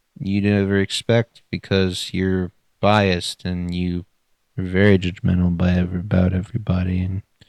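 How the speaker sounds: indistinct muttering. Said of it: "just mumbling at this point".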